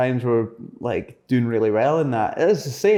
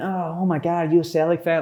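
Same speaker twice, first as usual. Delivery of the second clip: silly, stupid-sounding put-on American accent; 4 semitones higher than usual. Retelling approaching a fan on the street: stupid american accent. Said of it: "in a stupid American accent".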